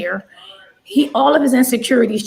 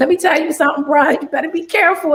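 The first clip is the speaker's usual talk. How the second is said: playful, half-joking, acted-out tone, pitched up; 5 semitones higher than usual. Retelling a warning given to a sister's partner: imitating a joking warning. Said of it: "I tried to say it in a joking way".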